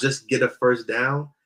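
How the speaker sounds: plain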